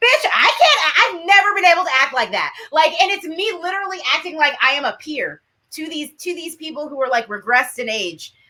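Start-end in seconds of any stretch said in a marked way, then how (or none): 0.0-2.5 put-on high, swooping, sarcastic mouthy teenager voice. Retelling her fourteen-year-old self: imitating her fourteen-year-old self. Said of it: "fourteen-year-old me being like".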